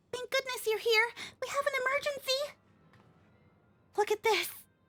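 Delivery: put-on childlike, very high-pitched kid voice. Voicing a character who greets an arriving visitor, in a kid voice. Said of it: "I gotta get back into the kid voice".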